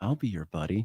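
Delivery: seductive. Pitching a tagline for a cuddle company: seductive. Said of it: "I'd say it seductively".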